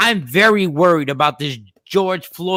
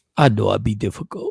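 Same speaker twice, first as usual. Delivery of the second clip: grainy, rough, creaky put-on voice; 8 semitones lower than usual.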